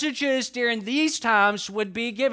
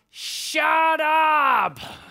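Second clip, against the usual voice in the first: mock startled, high toddler yell, drawn out upward; 6 semitones higher, 4 dB louder than usual. Retelling a startled little sister shouting at the evangelist: imitating a toddler yelling. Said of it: "and yelled out".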